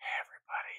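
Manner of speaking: fake, hushed, breathy whisper, very quiet. Joking about what to do in a hot tub, pretend whisper into the mic. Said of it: "whispering into the mic".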